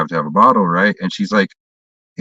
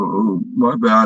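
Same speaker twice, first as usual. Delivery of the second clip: mock frightened, scared, backing-down tone; 3 semitones higher than usual. Retelling a confrontation, speaker quotes the man who snatched the bottle: imitating a scared apology. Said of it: "he got all scared and he's like".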